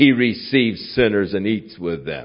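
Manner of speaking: mock contemptuous, derogatory, disapproving, scornful tone. Retelling how the Pharisees said it, in a mock derogatory tone. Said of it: "they were saying it in a derogatory sense".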